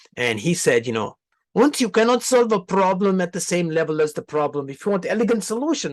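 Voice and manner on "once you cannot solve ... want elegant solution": high-pitched, clumsy, bad put-on German accent. Speaker quoting Einstein in a terrible German-accent Einstein impression. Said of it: "that's actually a terrible German accent".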